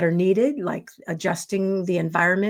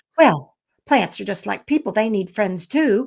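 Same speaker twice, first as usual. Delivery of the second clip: put-on Kentucky accent, faster pace; 5 semitones higher than usual. Retelling what their grandmother said about talking to her plants: imitating grandmother's Kentucky accent. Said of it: "And I would be like".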